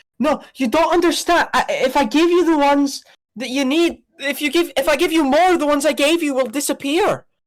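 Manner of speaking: very high, yapping voice with little yips. A game master voices an unseen speaker close to a player's character, talking in yips. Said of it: "continuing to talk in yips".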